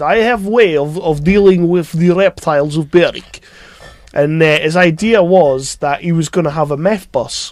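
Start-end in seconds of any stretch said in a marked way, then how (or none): 0.0-3.4 put-on Russian-sounding accent. Retelling what a man said about the reptiles outside Boots, in a Russian-sounding accent. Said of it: "he sounded Russian".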